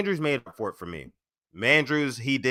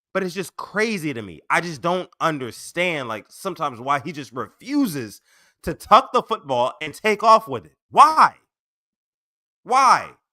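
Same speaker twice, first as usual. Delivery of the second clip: loud, upset, slightly angry exasperated outburst; 5 semitones higher, 4 dB louder than usual. Complaining about a player who refuses to take off with the football, loud, upset and a little angry. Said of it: "I'm sorry if I'm loud right now".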